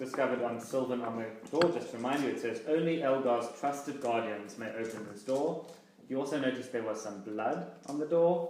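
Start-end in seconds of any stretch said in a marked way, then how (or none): none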